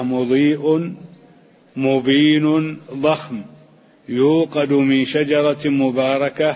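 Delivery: plain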